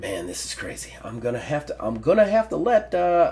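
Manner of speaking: grumbling, mumbling to himself. Voicing a ranger muttering to himself after locking the door: muttering to himself. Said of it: "you can hear him kinda muttering to himself".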